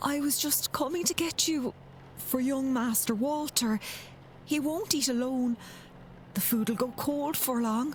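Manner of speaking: exaggerated put-on Irish accent. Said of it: "the accent that you keep falling into".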